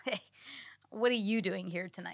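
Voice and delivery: distrustful, confrontational voice. Explaining how one greeting can sound very different; suspicious, challenging tone. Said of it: "That's implying, like, who are you to be in this place?".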